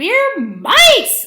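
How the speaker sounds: very high, loud, squeaky little mouse voices. The soldier mice answer their leader's question, in a squeaky mouse voice. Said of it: "they squeaked".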